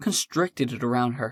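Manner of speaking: ordinary delivery, nothing marked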